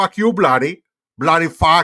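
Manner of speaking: loud, high, put-on Indian accent. Running through accents on a stream, doing an indian accent. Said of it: "you want an Indian accent?".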